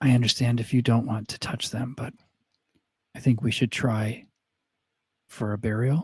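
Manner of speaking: distinct stage whisper. Voicing a character proposing a burial, barest half-whisper. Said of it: "you hear Ren just in the barest whisper".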